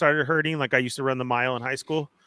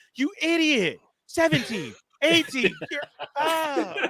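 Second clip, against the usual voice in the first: high, laughing mock yell. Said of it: "you're yelling at the T V".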